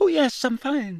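unnaturally high, pushed-up gabbling. A student answers a classmate asking if he is all right; unnaturally high voice. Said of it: "in the same unnaturally high voice".

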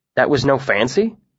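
ordinary delivery

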